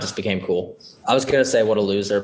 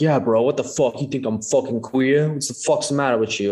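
put-on offended, incredulous, pitched-up indignant outburst; 5 semitones higher than usual. Retelling how an interview answer was spun: imitating Tom Hardy's offended tone. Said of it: "his inflection makes it seem like".

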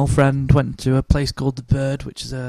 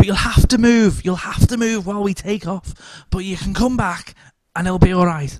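put-on very camp man's voice; 6 semitones higher than usual. Retelling what a kneeling man said to a woman, very camp voice. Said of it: "very camp".

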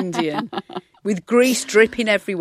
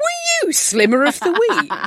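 play-acted very high, drawn-out shout; 11 semitones higher than usual. Retelling how a producer shouted a question across the office: imitating Paul shouting. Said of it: "producer Paul shouted across the office".

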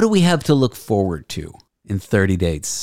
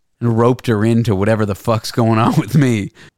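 ordinary delivery

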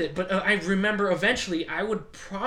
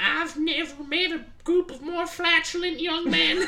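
put-on quavering, shaky, high old-lady grandmother voice; 9 semitones higher than usual. Retelling what grandmother said to the family about the kids, imitating grandmother's shaky voice. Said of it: "her shaky voice".

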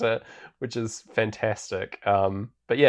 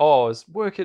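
high-pitched put-on Cockney accent; 5 semitones higher, 4 dB louder than usual. Imitating a delivery man from a film: Cockney accent. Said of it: "No, I'm not doing it again".

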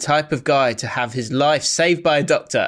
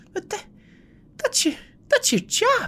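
quiet, exasperated, very high, fed up; 4 dB quieter than usual. Imitating Roy Keane's reply to goalkeepers: exasperated Roy Keane impression, not loud. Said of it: "He's exasperated, but it's not loud".

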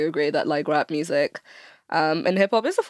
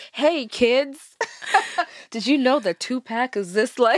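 cringy, pitched-up movie English teacher voice; 7 semitones higher than usual. Imitating a cringy movie English teacher addressing kids, in a cringy teacher voice. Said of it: "super cringy, like early 2000s, like movie English teacher who's like being like".

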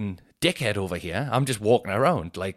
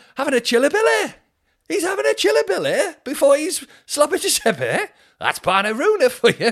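mock northern English accent, higher and louder; 6 dB louder than usual. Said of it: "'Cause it's Northwest, right?".

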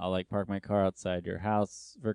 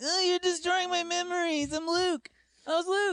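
very high, wounded, aggrieved, whiny complaint. Retelling a slap fight with the man who played luke, imitating the actor who played luke. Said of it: "he's like".

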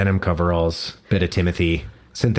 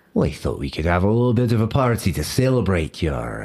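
put-on Scottish accent that slips in and out. Voicing the Scotsman greeting a player in their home: Scottish accent. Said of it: "my accent kinda wandered there".

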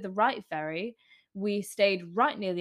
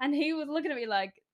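ordinary talk

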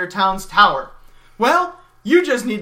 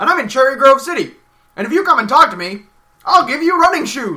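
put-on crazy oddball old man character voice; 4 semitones higher, 4 dB louder than usual. Acting in a fake commercial that offers running shoes: crazy old man character. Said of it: "I'm a crazy old man".

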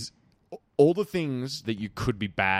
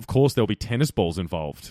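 plain

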